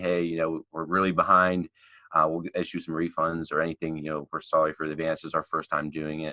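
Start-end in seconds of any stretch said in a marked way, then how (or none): none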